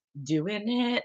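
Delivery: dry, self-congratulating, sarcastic little cheer. Retelling own weekly routine of filling the pill case: imitating own sarcastic routine. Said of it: "this whole little sarcastic thing".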